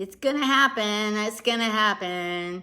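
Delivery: deliberately irritating, most annoying voice possible. Waiting for a call invite to go through: most annoying voice. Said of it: "the most annoying voice I can pull out".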